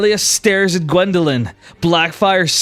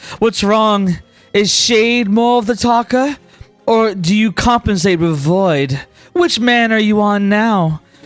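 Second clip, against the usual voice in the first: needling, goading, smug and mocking tone; 4 semitones higher than usual. Voicing a character who taunts a player to attack: smirking taunt. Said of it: "she says as her smirk widens".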